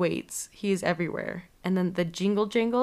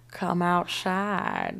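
put-on Southern accent, swooping and drawled out. Describing the priest in a movie and quoting him: southern drawl. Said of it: "He has a southern drawl".

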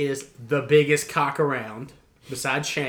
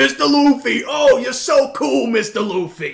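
very high, loud, put-on Bronx accent; 10 semitones higher, 8 dB louder than usual. Imitating a character from the show, in a Bronx accent. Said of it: "he's Bronx".

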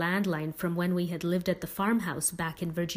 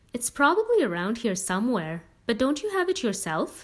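doubtful, probing, suspicious, pitched-up delivery; 5 semitones higher, 3 dB louder than usual. Mr. prendergast, asked for the narrator's dad's phone number, asking suspiciously. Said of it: "he asked suspiciously".

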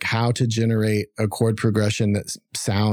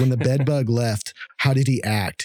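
intense-sounding delivery. Quoting a scene where Dwight asks about bed bugs: imitating Dwight. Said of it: "the scene from The Office where Dwight is asking".

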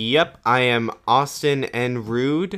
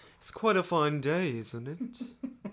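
slow, clumsy, bad British accent; 4 semitones higher, 10 dB quieter than usual. Trying out an accent after asking about doing the episode in accents: attempted british accent. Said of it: "I still can't do British accents".

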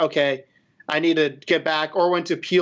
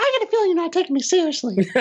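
squeaked out, swooping way up in pitch; 13 semitones higher than usual. Sharing a favorite game voice line, the speaker does a Mickey Mouse-like voice. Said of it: "That was like Mickey Mouse doing sounded it".

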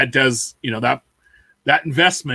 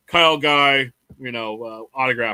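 usual speaking voice

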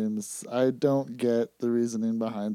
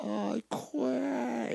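distorted video game voice, much higher; 12 semitones higher, 8 dB quieter than usual. Recalling players submitting in a wrestling video game, WrestleMania 2000 distorted submit yell. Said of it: "in like this distorted voice".

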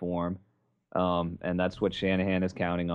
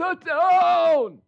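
put-on excited broadcaster voice, higher and louder; 8 dB louder than usual. Imitating a broadcaster's call of a long touchdown run: Larry Michael impression. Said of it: "That was my impression of his, his call".

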